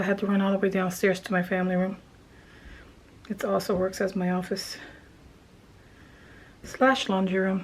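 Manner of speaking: out of breath. Explaining a run downstairs while crafting, out of breath. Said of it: "Sorry for being so out of breath".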